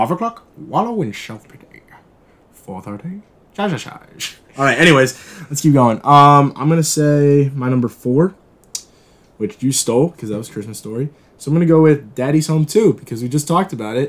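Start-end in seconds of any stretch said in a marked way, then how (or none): 0.0-4.4 soft, small, hushed, tucked-away put-on character growl. Quoting a favorite Christmas movie in a little Grinch voice. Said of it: "in my little Grinch voice that I try".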